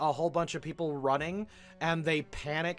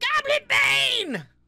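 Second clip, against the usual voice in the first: shrill, very high, very loud goblin screech; 8 dB louder than usual. Voicing a goblin pyro who spots a foe: goblin screaming. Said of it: "one of the goblin pyros sees Ranrua and screams".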